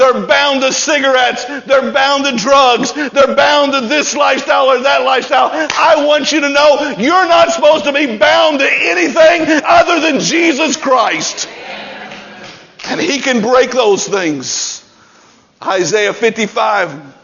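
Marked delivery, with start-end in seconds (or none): 5.5-14.8 building, loud, full-voiced raised preaching. Speaking about people bound to cigarettes and drugs, getting loud. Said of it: "I'm sorry I'm getting so loud".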